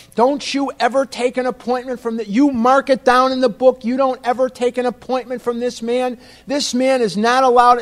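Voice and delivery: acted-out, high-pitched screaming rant. Retelling a man screaming at his daughter about the speaker; imitating a man screaming. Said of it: "he's screaming at his daughter".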